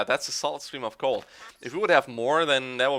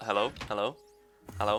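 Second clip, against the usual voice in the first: repeated word in a questioning tone; 4 semitones lower, 9 dB quieter than usual. Imitating how Jobster answers when called. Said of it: "That's how Jobster answers if you call him".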